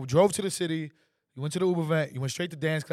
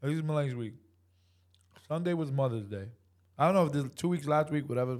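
words muffled by chewing, talking with mouth full; 4 dB quieter than usual. Recounting someone's busy week to the others, talking while chewing. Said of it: "What you got in your mouth?".

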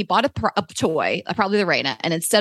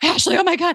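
high-pitched, winded, breathless exclamation; 10 semitones higher than usual. Retelling how a running fan greeted them: imitating someone out of breath. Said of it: "he's, like, out of breath".

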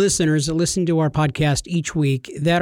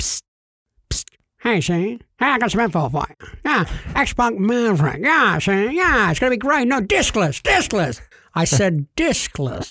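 put-on 1940s old-time gangster voice, higher; 3 semitones higher than usual. Acting out an insider passing info to Shane, in a 1940s gangster voice. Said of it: "Why did you talk like a 40s gangster?".

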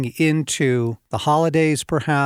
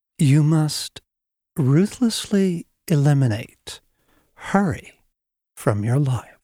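put-on old professor voice, professorial delivery. Quoting a retired college professor's phrase on hurry: Dallas Willard impression. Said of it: "I'll do my best Dallas impersonation".

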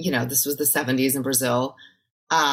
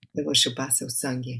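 straight-faced deadpan delivery, much quieter; 3 semitones lower, 7 dB quieter than usual. Asked to play a vampire, repeating the line in portuguese: said without a smile. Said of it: "Say it without a smile now".

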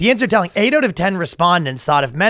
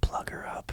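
soft, unvoiced whisper. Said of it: "then I whisper in her ear".

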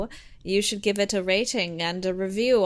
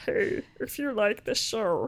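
put-on frog puppet voice; 4 dB quieter than usual. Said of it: "I'm Kermit".

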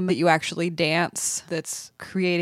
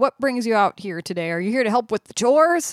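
put-on grumpy, begrudging, surly old man voice; 4 semitones higher than usual. Retelling a grandpa speaking to a visitor: imitating a surly grandpa. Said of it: "Grandpa's surly".

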